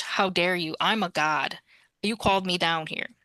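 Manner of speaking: put-on unhappy deity voice. Retelling what a god said to his followers, mock-displeased god. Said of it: "He was not happy about that".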